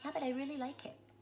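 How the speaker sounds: put-on soft, small, babyish, wheedling baby voice. Quoting her wanting the speaker's ring, in a little baby voice. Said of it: "she would talk in this little baby voice".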